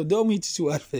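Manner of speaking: normal talking voice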